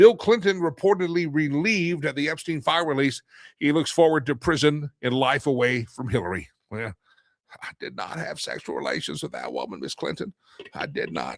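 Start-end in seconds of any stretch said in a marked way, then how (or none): 7.6-11.4 breathy, hushed, half-whispered voice. Reading a meme about an ex-president, then doing his Bill Clinton impression. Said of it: "I can still do that impersonation pretty good".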